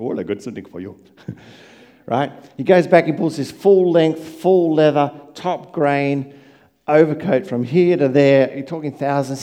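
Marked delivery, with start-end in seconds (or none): 0.0-1.0 put-on accent sliding into a Pakistani accent. Speaker retells a man offering him something, accent leaning Pakistani. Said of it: "they tend to lean towards a Pakistani accent".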